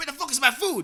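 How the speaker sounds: mock shrill, very high, loud, angry, rude yell. Retelling how a girl demanded her food from the waiter: imitating a rude girl yelling. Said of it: "she's like".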